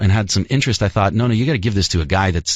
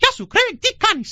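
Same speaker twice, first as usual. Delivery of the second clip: very high-pitched cartoon mouse voice. Asked whether he can do Mickey in Greek, a Mickey voice in Greek. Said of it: "Mickey would say".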